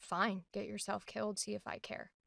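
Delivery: very quiet, cold, flat, emotionless callous murmur. Trying out a line for a character who is not sarcastic, callous emotionless delivery. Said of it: "callous energy of like".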